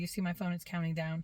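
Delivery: ordinary delivery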